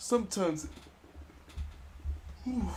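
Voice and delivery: very soft, breathy speech through a yawn. Advising a listener on supporting a team, yawning mid-sentence. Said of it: "sorry for yawning".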